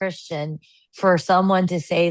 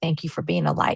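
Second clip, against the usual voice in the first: imitated whispering. Retelling what a girl whispered during a hug: imitating someone whispering. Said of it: "she gave me a hug and she whispered".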